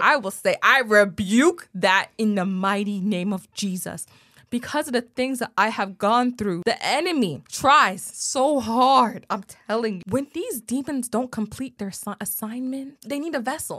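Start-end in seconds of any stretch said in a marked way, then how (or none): 0.6-4.1 slow, firm, bold delivery spoken aloud. Showing how the rebuke will be said now: said out loud, not whispered. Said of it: "I will not whisper that".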